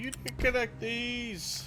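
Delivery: put-on screaming. Imagining people reacting to an unconnected building: imitating people screaming. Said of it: "I bet people were just screaming at me like".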